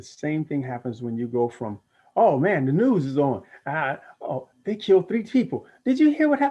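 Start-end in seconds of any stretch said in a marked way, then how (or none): 2.2-6.5 agitated, high, loud, rising anxious chatter. Showing how the energy shifts when talking about the news: higher-energy changed voice. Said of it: "as I change my voice, the energy changes".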